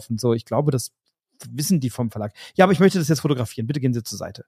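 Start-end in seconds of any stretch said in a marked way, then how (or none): 2.6-4.3 curt, brusque brush-off tone. Retelling how a photographer spoke to a fair visitor: imitating a brusque photographer. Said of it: "aber in so einem Tonfall".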